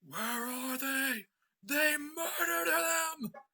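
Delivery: shrill very high rising yell. A narrator voices a familiar voice heard at the top of the stairs, yelling. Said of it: "a familiar voice yelling".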